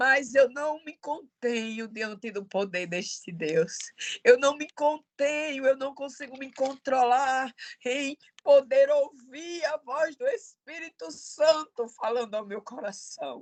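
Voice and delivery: crying, tearful, overcome preaching voice. Speaking to dear listeners while praising God, tearful voice. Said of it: "me perdoe a voz chorosa".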